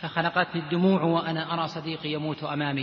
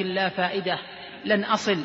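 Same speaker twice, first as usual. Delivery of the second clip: usual speaking voice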